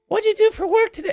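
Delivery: very high-pitched, put-on female voice. Speaker imitates their girlfriend asking about work, imitating girlfriend's female voice. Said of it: "I can't do female voice".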